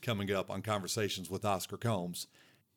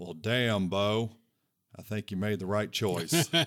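dry, deadpan coach voice. Retelling his coach's reply after hearing about his breakup, Rich Brooks deadpan voice. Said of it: "in that dead dry pan voice".

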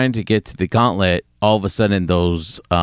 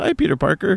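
put-on offhand casual voice, very high pitch; 12 semitones higher than usual. Retelling a movie scene, quoting Captain Marvel: nonchalant Captain Marvel line. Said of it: "real nonchalant".

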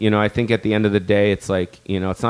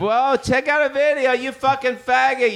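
very high, shrill, abusive yell. Retelling a staged street scene, what the other would say: imitating someone yelling. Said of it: "you'd yell at me and shit".

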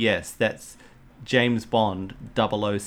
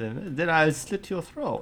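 put-on Austrian accent, pitched up; 6 semitones higher, 4 dB quieter than usual. Quoting a film character's line, in an austrian accent. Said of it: "In his very best Austrian accent".

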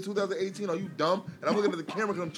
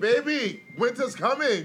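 put-on heavy, thick Spanish accent; 6 semitones higher, 5 dB louder than usual.

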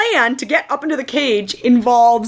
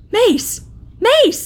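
very high, overjoyed, excited calling out; 10 semitones higher than usual. Retelling how Mace's dad spots his son below: retelling excited calling out. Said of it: "Mace's dad becomes so excited that he goes".

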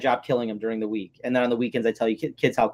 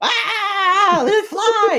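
put-on scream, much higher and louder; 6 dB louder than usual. Speaker on the phone retells Colin opening the beetle container: imitating Colin screaming. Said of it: "And he's like screaming".

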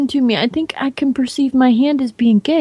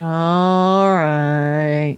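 put-on depressed donkey voice, lower; 7 semitones lower than usual. Describing the Winnie the Pooh characters: Eeyore voice. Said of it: "And Eeyore's like".

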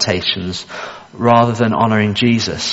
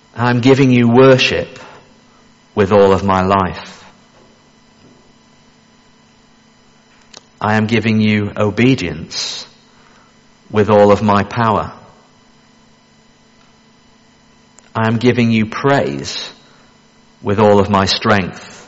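very slow, unhurried reading pace. Reading a Carmichael text aloud so listeners can reflect, reading very slowly. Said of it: "I want to read it slowly to you now".

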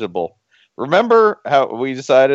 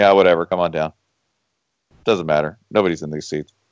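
very low, bored, couldn't-care-less tone; 7 semitones lower than usual. Mocking Cal fans crowded around the fifty: imitating an indifferent Cal fan. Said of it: "they're like".

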